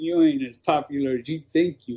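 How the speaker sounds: mock under-breath mutter. Walking to the car, speaker recounts what he said: retelling muttered remark. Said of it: "under my breath".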